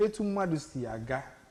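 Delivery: plain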